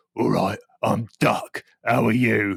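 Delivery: deep tough-guy voice. Bathing a child, voicing the bath duck in Duck's gangster voice. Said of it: "doing the old gangster voice".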